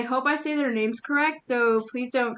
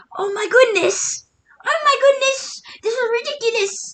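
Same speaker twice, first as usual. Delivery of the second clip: put-on yelling, higher pitch; 11 semitones higher, 4 dB louder than usual. Retelling a TV chef judging a contestant, imitating Gordon Ramsay screaming.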